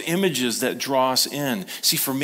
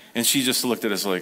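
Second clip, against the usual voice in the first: usual speaking voice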